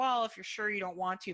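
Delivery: ordinary delivery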